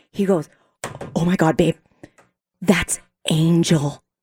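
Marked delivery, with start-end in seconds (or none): 1.1-3.9 put-on whisper, much lower in pitch. Telling a story about a crowded escalator, imitating James whispering. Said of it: "James whispers over to me, or tries to".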